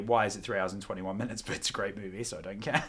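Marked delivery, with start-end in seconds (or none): 0.0-1.4 lower, softer mock grumbling. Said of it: "I feel like I should say".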